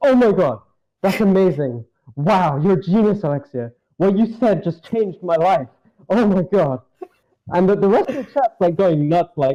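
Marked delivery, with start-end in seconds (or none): 0.0-6.8 high, effusive, gushing, starry-eyed admiration. Retelling how a chat member praised someone else's advice: imitating Ruben gushing. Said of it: "and Ruben goes".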